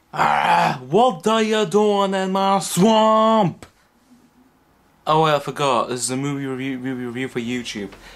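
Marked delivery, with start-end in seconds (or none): 0.2-3.7 booming, loud, high voice, belted and very drawn out. Opening a movie review with a little tribute: Shrek voice. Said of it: "little Shrek tribute".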